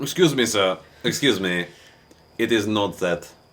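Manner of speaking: very slow, drawn-out, put-on French accent. Imitating a director correcting a performer's pronunciation, in an attempted French accent. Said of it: "I don't know if that was French or not".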